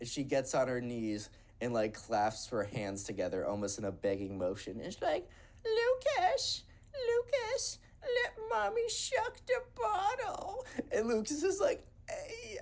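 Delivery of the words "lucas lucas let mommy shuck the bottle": put-on very high, drawn-out, slow baby voice. Retelling a woman pleading with a guy at a party, in a baby voice. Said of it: "do the baby voice".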